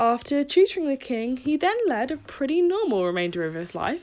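tongue-in-cheek, sarcastic, understated aside. Speaker telling listeners about Aristotle's later life, sarcastic. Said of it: "I hope you can sense the sarcasm there".

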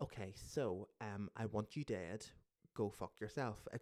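soft, flat, utterly matter-of-fact deadpan. Explaining how they deliver harsh words without losing their temper; flat, matter-of-fact. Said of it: "It's just very matter of fact".

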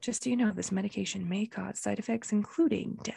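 soft, creaky, fine-print reading voice. Teased for adding disclaimers to everything, showing how; legal disclaimer voice. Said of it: "I put it in the".

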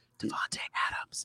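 barely audible hushed whisper, very quiet. Saying the one name he won't otherwise say, whispered name Davante Adams. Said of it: "and I will whisper his name here".

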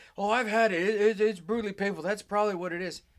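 loud, high-pitched, annoyed know-it-all tone.

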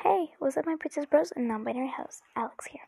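restrained, subdued, low-key, toned-down delivery. Greeting viewers while their brother sleeps in the next room; talking very quietly. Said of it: "Sorry if I'm talking very low".

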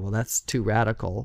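normal talking voice

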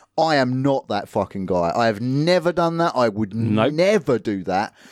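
ordinary talk, nothing marked

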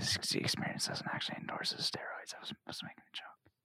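soft, unvoiced whisper, close to the mic. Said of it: "I don't think you should whisper those".

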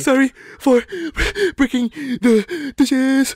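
mock sobbing kid voice. Joking that a sound resembles a kid crying while apologizing; crying kid apologizing. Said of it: "sounds like a kid who's crying".

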